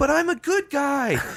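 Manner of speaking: very high, earnest, drawn-out voice. Mocking a fighter who expects people to like him: imitating Cormier. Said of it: "expecting people to like him because he's like".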